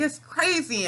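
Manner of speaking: put-on excited high yell. Retelling a guy screaming excitedly in the parking lot; imitating loud excited shouting. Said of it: "he's so loud".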